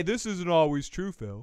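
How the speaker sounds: usual speaking voice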